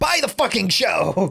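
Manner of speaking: cartoonish villain voice. Introducing a manga discussion, recalling a line from the abridged series in a Frieza impression. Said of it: "I think of Frieza going".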